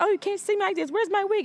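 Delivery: put-on, very high, rapid, frantic, panicked scramble of words. Retelling a movie scene where the mother's wig comes off, acting out panicking. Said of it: "She's panicking".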